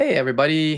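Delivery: high, cracking voice. Host opening his live show, greeting everybody, voice cracking. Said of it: "my voice just cracked".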